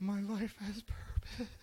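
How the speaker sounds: put-on sarcastic joy, very high, very slow, drawn out. Retelling own reaction when a student repeats a lesson: retelling own sarcastic joy. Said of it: "jump for joy whenever, like, kinda sarcastically".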